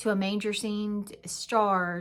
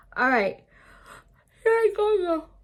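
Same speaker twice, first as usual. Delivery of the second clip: high, loud yawn stretching the words; 10 semitones higher, 6 dB louder than usual. Speaking to viewers while writing a list, yawning while talking. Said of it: "I don't know why I'm yawning".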